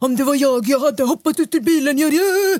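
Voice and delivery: high, loud mock know-it-all, judgmental tone.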